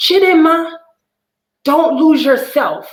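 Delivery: put-on Nigerian accent, very high. Retelling what their mom said to them, imitating her Nigerian accent. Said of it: "so I got to say in her accent".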